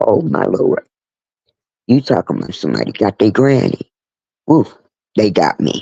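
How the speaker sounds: teary, near-crying voice on the edge of tears. Grandmother telling listeners about her grandson and his wife, on the verge of tears. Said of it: "I'm about to cry".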